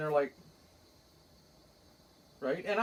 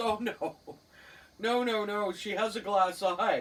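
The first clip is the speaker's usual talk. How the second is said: plain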